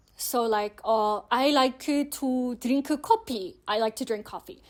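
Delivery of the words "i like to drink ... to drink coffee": put-on Korean accent speaking English. Showing how Korean speakers might pronounce English: imitating Korean-accented English. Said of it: "how Korean people who might not be very fluent in English, how they would pronounce English".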